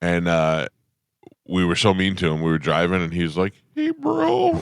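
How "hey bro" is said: very high-pitched, casual, buddy-like "hey". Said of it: "He had a really high-pitched voice".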